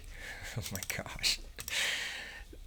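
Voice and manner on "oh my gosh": soft, whispered, disbelieving laugh under the breath. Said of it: "I'm laughing".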